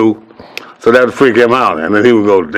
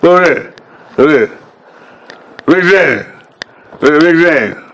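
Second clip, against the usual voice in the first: clenched-teeth voice, pitched up; 5 semitones higher than usual. Speaker acts out how Charlie always talks: Charlie talking through clenched teeth. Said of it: "his teeth is locked together".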